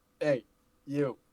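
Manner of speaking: calling out, pitched high. Horvath tries to rouse an unconscious man, yelling. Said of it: "So Horvath yells".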